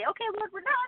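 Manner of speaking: very high, playful, teasing ribbing. A parent of seven recounts what the family tells the lord, retelling a teasing line. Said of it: "we sort of teasingly say".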